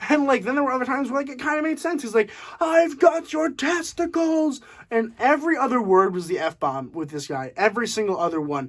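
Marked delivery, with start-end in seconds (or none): 2.6-4.6 high, slow, mild mock scream. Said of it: "He screamed the entire film".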